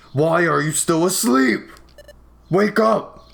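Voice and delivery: very loud, high, blasting yell. A fellow apprentice wakes someone still asleep: Loudred shouting very loudly. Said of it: "my poor ears".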